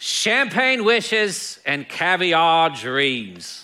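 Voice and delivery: very slow, bad, fake Australian accent. Speaker quotes a TV host's closing catchphrase, in a bad Australian accent. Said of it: "That's my best Australian accent".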